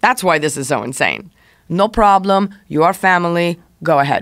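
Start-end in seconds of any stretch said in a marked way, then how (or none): 1.7-4.2 put-on, weird, fake Russian accent. Retelling a man's reply when told the speaker was leaving: fake Russian accent. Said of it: "I'm making him sound Russian".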